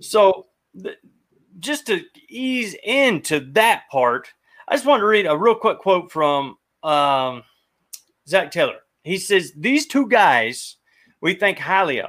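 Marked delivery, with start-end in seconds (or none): 9.6-12.1 sounding like a New Yorker. Speaker reading a quote aloud to another person, New York accent. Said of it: "Why did you sound like a New Yorker there?".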